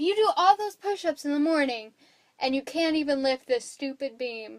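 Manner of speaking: cheeky, sassy, teasing ribbing tone. Retelling a movie scene where the butler mocks Bruce: imitating Alfred sassing. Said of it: "you're sassing me right now".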